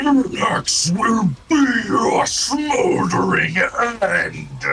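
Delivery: slow, booming, drawn-out dragon roar. Game master voicing a blind creature threatening the players, bellowing. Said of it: "he bellows out, and he says".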